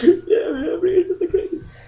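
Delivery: high-pitched, mock sobbing, words through tears. Retelling what a kid said after being kicked, imitating a kid crying. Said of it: "He was like crying".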